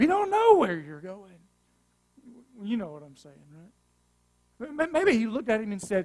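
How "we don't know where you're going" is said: raised, sarcastic, needling tone. Imagining how he might have said it: mock-sarcastic. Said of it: "Or maybe it was more sarcastic".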